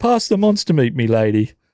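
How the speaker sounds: light hint of a British accent. Playing a guessing game, showing how a clue should be said: almost a british accent. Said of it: "said with almost a British accent".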